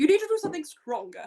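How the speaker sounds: sharp, high-pitched put-on stage voice. Repeating the last line again in the sharpest voice. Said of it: "get back into my sharpest voice".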